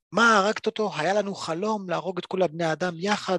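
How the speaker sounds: mock, tearful, sobbing, grieving demon voice. Recapping a story, speaker voices a demon crying over her killed partner. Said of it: "והיא מתחילה לבכות".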